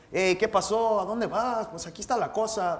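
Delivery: Spanish spoken the Mexican way. Showing how different Spanish dialects sound: Mexican Spanish accent. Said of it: "Mexican Spanish, it's like, it sounds like this".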